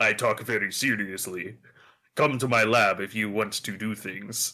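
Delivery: serious, low put-on Russian accent, agent voice. Describing a serious government-agent character, the speaker voices him with a russian accent. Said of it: "I don't know why I'm giving him the Russian accent".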